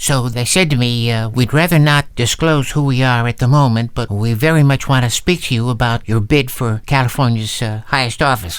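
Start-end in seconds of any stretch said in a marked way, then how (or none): none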